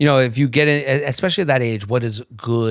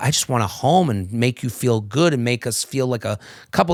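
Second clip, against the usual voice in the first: ordinary talk, nothing marked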